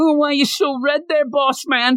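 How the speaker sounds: high, mocking, taunting voice from a distance.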